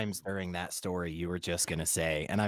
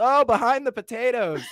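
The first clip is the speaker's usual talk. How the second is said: very high, shrill, loud hollered yell; 6 dB louder than usual. Imagining a guest asking from the bathroom, imitating Crafty yelling. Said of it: "And Crafty yells".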